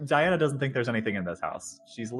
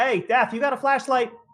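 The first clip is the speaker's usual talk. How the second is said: very high, loud shout; 11 semitones higher, 5 dB louder than usual. Calling upstairs in character to ask for a flashlight: yelling upstairs. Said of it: "I'm gonna yell upstairs, be like".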